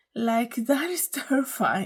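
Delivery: laughing through the words. Reacting to a story about a robot companion, laughing while talking. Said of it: "I'm sorry that I'm laughing".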